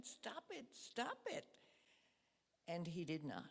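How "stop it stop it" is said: sudden, exploding outburst yell, pitched high. Retelling a clash with a ranting person: retelling her own yell. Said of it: "I just yelled at him in a loud voice".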